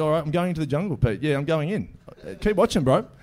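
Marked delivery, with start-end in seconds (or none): none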